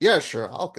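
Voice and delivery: put-on macho, big strong man voice. Retelling a film character offering to get the car, imitating a big strong man. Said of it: "big strong man".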